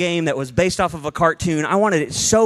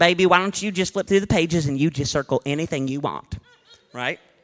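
cheery, jolly grandmother voice. Recalling a grandmother handing over a highlighter, imitating Wanda. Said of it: "she sounded like this".

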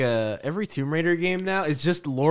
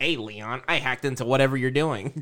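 silly, cheesy, goofy little villain voice; 2 semitones lower than usual. Mocking the little guy calling Leon on the video phone: imitating the little guy character. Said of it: "he'll call you, and it's, like, his face".

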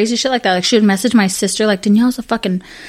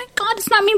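put-on very high, tearful sobbing speech; 11 semitones higher, 4 dB quieter than usual. Mocking a woman who was crying, imitating someone crying. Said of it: "She's fucking crying".

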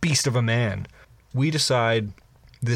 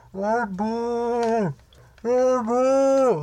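put-on very high, very slow, drawn-out distant shout; 12 semitones higher than usual. Retelling a far-off man shouting at the speaker, imitating his distant shout. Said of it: "he's shouting something at me".

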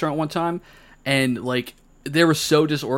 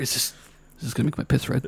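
breathy whisper, under the breath; 5 dB quieter than usual. Acting out a diner asking the waiter a question: imitating someone whispering. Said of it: "You're whispering to the waiter".

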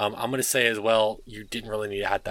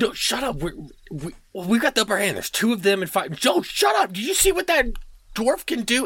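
bickering hobgoblin voices, much higher and louder; 13 semitones higher, 4 dB louder than usual. Narrator voices the hobgoblins arguing among themselves, as bickering hobgoblins. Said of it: "they get right back to bickering".

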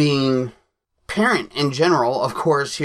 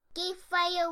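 loud yelling, higher; 11 dB quieter than usual. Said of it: "Say, "Geek Father," real loud".

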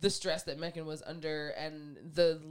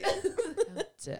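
slow, loud, over-the-top posh British drawl. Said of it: "British accent".

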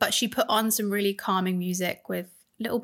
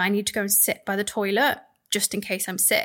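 usual speaking voice

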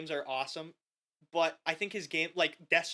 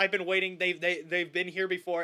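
ordinary talk, nothing marked

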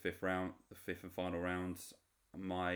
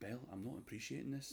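mock affected, pitched-up, would-be intelligent delivery; 5 semitones higher, 6 dB quieter than usual. Retelling a reality show argument, imitating a man trying to sound intelligent. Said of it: "act intelligent and acts like".

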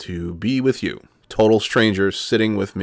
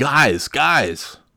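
half-hearted calling out; 5 semitones higher than usual. A dad retelling yelling at his children during a recording, retelling a yell. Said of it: "I'm yelling".

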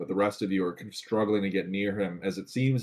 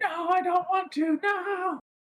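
shrill, very high, long stretched-out screaming. Describing a game scene, acting out a character screaming in Dwarvish. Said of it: "he's screaming like".

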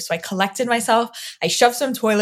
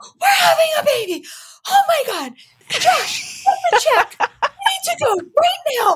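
very high, swooping, thrilled, excited shrieking; 3 dB louder than usual. Retelling a friend's reaction in a restaurant: imitating someone screaming excitedly. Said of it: "screaming in the restaurant".

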